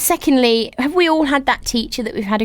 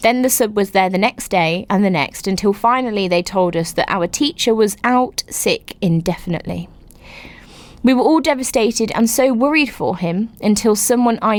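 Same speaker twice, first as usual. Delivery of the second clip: ordinary talk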